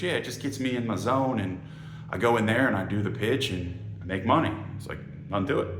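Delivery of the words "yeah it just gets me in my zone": ordinary delivery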